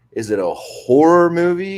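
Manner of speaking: slow, stressed, stretched "horror". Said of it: "or is it a horror movie".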